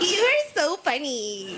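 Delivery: fake ditzy, very high, wide, fascinated gushing.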